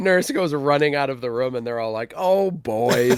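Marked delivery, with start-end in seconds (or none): 2.2-3.2 mock smiling tone, higher and louder. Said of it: "shake their heads and smile like".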